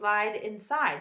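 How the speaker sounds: ordinary delivery, nothing marked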